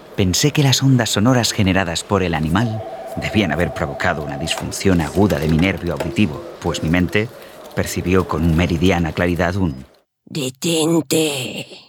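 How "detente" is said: unusual rage, furious, very high-pitched cry. A voice the narrator perceives from an animal, with unusual rage. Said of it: "saliendo con rabia inusitada".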